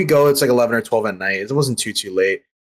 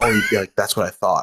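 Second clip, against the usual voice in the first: put-on whisper, much lower pitch; 4 semitones lower than usual. About a man by the stairs after getting off the train, retelling a stranger's whisper. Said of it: "He was like he like whispered".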